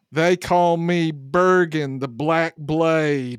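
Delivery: Gate Town accent laid on thick, exaggerated. A player voicing Schnobich introducing himself, in Schnobich's exaggerated Gate Town accent. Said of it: "puts on an exaggerated Gate Town accent".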